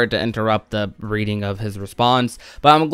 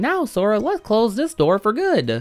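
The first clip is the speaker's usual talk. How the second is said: swooping, high cartoon voice; 9 semitones higher, 4 dB quieter than usual. Describing a Kingdom Hearts scene, quoting Mickey: terrible Mickey Mouse voice. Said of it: "I do a terrible Mickey voice".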